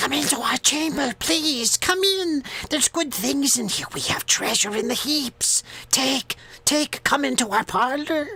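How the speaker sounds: loud, shrill, very high-pitched voices. Game master voices the beings calling to Farley's party, in loud high-pitched voices. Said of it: "some loud, high pitched voices".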